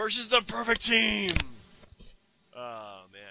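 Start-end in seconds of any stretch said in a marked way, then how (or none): 0.0-1.3 badly done, loud, raised ring-announcer call. Trying to announce the first match in Vince McMahon's voice: failed Vince McMahon impression. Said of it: "I just can't do his voice for some reason".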